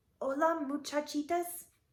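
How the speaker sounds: very very soft, hushed, gentle voice. Narrator reading a children's story as Skippy John Jones speaks: very soft voice. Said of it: "he said in a muy, muy soft voice".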